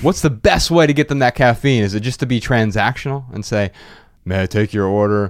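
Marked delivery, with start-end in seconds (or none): 4.2-5.3 blunt, borderline rude, low, flat monotone. Demonstrating the wrong way for a barista to greet customers; monotone and blunt. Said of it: "being monotone and blunt and borderline rude".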